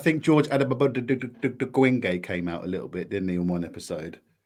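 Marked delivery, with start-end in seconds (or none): 0.2-2.2 put-on Ugandan character accent. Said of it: "the guy from Uganda".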